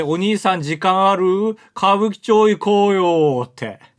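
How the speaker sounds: mock, halting, broken Japanese speech. Retelling how a foreigner accosted them while walking, halting broken Japanese. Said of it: "片言で、".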